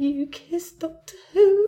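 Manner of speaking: put-on, very high, loud, hard sobbing. Retelling a story about someone by the bed, imitating someone sobbing. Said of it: "really sobbing".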